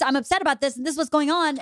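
rapid-fire rush of words. Speaker imitates the wife, a very fast talker, imitating a very fast talker. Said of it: "She's talking like this".

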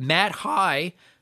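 voice cracking. Reading out a list of thank-you names: voice cracking. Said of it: "there's my voice crack".

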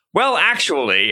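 ordinary talk, nothing marked

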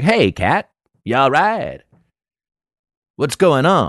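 put-on laid-back, casual cool, swooping tone. Retelling reacting when the kid hits his head: imitating acting real cool. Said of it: "act, like, real cool when he hits his head".

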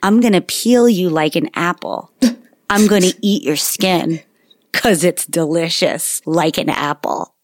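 low, completely flat, expressionless put-on deadpan. A parent retells what their kid said after running something up their leg, retelling a deadpan line. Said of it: "in a completely deadpan tone".

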